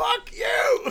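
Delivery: very high, very loud, shrill tea-kettle screech. Recounting a scene where she swears at him, retelling a tea-kettle scream. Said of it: "she's screaming, she sounds like a tea kettle".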